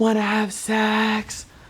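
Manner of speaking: breathy, high, airy, drawn-out voice aiming at allure. Retelling what a woman said to him, airy voice. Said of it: "an airy voice".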